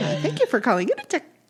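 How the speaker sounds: fast, lilting, high, sing-song receptionist phone voice. Imitating a receptionist answering the phone, in a lilting high receptionist voice. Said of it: "It's a lilting high voice".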